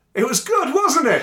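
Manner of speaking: high-pitched, proud shout.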